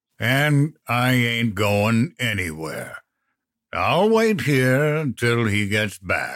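lazy, slow, drawn-out ogre drawl. A narrator reads the ogre's reply to Mom at the door, Moses the ogre drawling. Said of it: "the ogre drawled".

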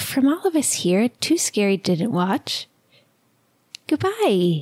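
put-on creepy little-kid voice. Podcast host signing off the episode for everyone: creepy little child voice. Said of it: "So I'll do a little creepy child voice and say".

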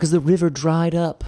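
affected, put-on hippie voice. Adding to another speaker's weeping-tree example, in an affected hippie voice. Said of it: "we both just used like affected hippie voices".

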